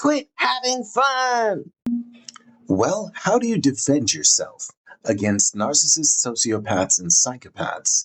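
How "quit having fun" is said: high, slow, drawn-out scream. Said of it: "Then he starts screaming".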